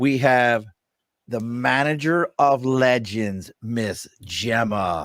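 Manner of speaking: very slow, drawn-out wrestling ring announcer voice. Introducing a guest on the show, in a wrestling announcer voice. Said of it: "That was my best announcer voice".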